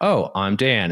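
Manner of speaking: put-on patronizing voice, as to a small child. Retelling greeting a stranger, imitating talking down to a child. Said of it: "doing this, like, whatever impersonation of".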